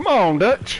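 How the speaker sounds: very high-pitched, urgent, pushing voice. Trying to learn how to interpret him, repeat a line in an Arthur Morgan impersonation. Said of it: "That was my impersonation".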